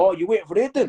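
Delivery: terrible put-on Scottish accent. Retelling what Bob Moffat said outside the garage: terrible Scottish accent. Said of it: "I'm gonna do a terrible Scottish accent here".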